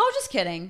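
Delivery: casual, offhand, nonchalant throwaway tone. Retelling the guy taking back what he said: imitating a nonchalant tone. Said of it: "So nonchalant about it".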